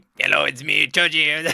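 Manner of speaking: loud, creaky, carefree, not serious at all. Reacting to an anime scene, the speaker imitates Choji walking up with no seriousness. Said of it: "It's just no seriousness at all".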